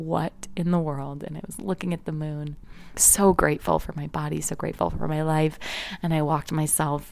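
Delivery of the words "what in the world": ordinary delivery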